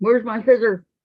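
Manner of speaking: loud, high, carrying yell. Looking for scissors while crafting, yelling across the house. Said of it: "Why are you yelling like you're yelling across the house?".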